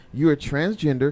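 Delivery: ordinary talk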